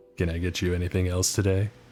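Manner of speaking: put-on deepest possible voice. Retelling answering a drive-through order as instructed: imitating his own deepest voice possible. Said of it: "do it in your deepest voice possible".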